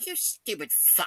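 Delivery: faint, hushed, breathy whisper. Retelling what the teacher says as class ends: imitating a whisper. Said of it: "she just kinda whispers behind my ear".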